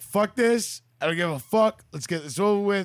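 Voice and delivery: put-on high, angry, furious, fed-up outburst. Retelling walking in for a procedure: imitating own angry words. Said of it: "I'm so fucking angry".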